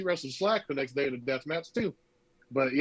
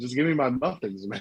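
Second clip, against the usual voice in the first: completely deadpan, dead straight delivery; 2 semitones lower than usual. Retelling a friend's story, quoting a man's line in his deadpan manner. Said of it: "he was just deadpan".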